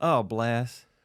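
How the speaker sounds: put-on Southern woman's accent with a drawl. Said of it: "Southern woman's accent".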